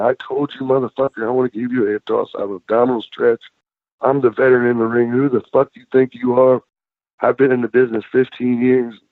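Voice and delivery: put-on yelling, screaming, hollered tirade. Retelling how a wrestler came back through the curtain: imitating someone yelling and screaming. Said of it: "comes back through the curtain yelling and screaming at me".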